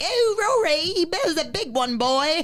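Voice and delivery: cheerful put-on English accent, high and drawn out. Retelling what a dog owner said, imitating an English accent. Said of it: "your English accent is, is incredible".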